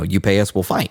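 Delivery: ordinary talk, nothing marked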